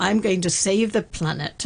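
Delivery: plain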